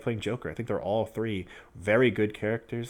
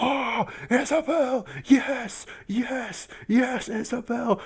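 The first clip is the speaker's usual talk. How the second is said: very high, drawn-out, hyped, excited yell; 4 dB louder than usual. Retelling watching a character reveal in the car: retelling own excited yelling. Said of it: "I was literally yelling in my car".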